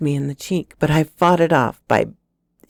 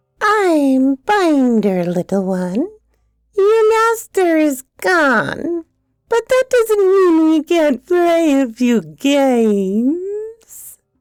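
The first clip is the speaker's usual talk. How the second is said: very high voice, "games" drawn out; 13 semitones higher than usual. Narrator reads the mouthless creature Binder speaking to the frightened narrator, high-pitched voice. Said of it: "It spoke in a high-pitched voice".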